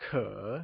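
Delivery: falling-rising tone on 可, dipping low then climbing. Modeling characters for the learner to repeat, the teacher says: falling-rising tone on 可. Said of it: "It is said with a falling rising tone".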